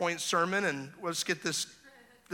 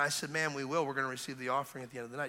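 ordinary talk

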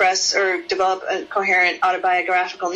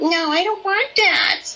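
put-on very high, whiny child's voice; 11 semitones higher than usual. Acting out a little girl refusing her mom's sweater, in a mock-whiny rejecting voice. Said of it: "this really rejecting, whiny voice".

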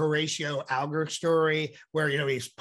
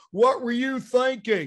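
put-on Texan TV-host voice, pitched higher; 8 semitones higher than usual. Showing how a voice comes together: Dr. Phil voice. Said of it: "Like someone like Doctor Phil".

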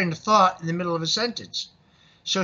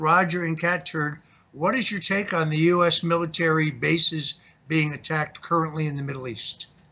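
usual speaking voice

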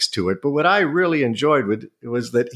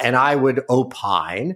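ordinary delivery

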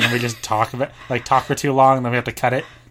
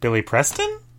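voice rising on the word Preston; 3 dB quieter than usual. Repeating a name they said earlier as a question, rising on Preston. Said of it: "Because I said it as a question".

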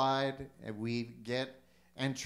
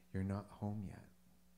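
soft, gentle put-on voice; 5 semitones lower, 10 dB quieter than usual. Telling of a man's complaint to God, then imitating God's gentle voice. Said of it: "God's little gentle voice just says".

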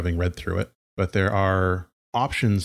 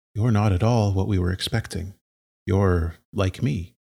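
sad voice with a faint glimmer of hope. A narrator voices a character learning about the player, sad but hopeful. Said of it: "a voice that is sad but also a little bit hopeful".

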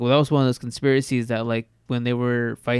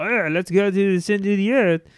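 clumsy fake German accent, pitched up; 8 semitones higher than usual. Imagining a historical figure reading a book and reacting: bad german accent. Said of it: "that's a bad German accent".

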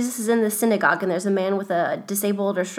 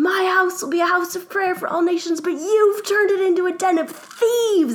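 mock top-of-the-lungs, very high, angry, furious scream; 10 semitones higher, 3 dB louder than usual. You tell how you flipped everything over and turned to the shocked crowd, re-enacting an angry scream. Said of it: "I started like screaming at them".

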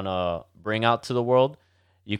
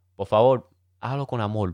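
Cuban Spanish accent, amor said amol. Telling visitors how to order a colada at the window, Cuban Spanish pronunciation. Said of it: "notice how I said amol, because I mean, us Cubans".

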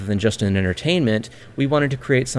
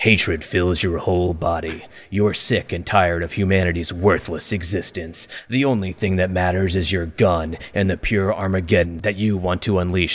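put-on Polish accent with an edgy tone; 4 semitones lower than usual. Reading a game's store-page description aloud, the speaker uses an edgy Polish accent. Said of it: "Polish accent".

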